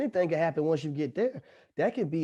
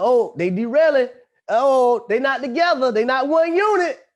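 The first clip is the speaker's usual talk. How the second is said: put-on loud taunting tone, higher and louder; 9 semitones higher, 10 dB louder than usual. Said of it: "I'ma say it in front of everybody".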